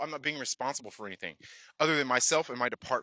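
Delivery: plain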